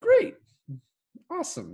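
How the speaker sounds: very high-pitched sing-song tone, shooting way up, swinging. Retelling a movie scene where a character agrees to lunch: imitating a high-pitched voice. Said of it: "In that same high-pitched tonality".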